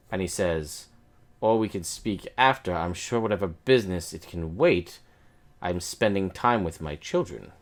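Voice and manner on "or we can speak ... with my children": annoyed, upset nobleman character voice. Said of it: "is seemingly upset".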